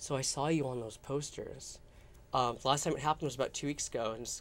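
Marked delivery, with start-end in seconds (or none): 0.0-1.8 very quiet, hushed, slow, under the breath. Retelling what a guy at a club says to the speaker after flirting, in a very quiet voice. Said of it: "in a very quiet voice".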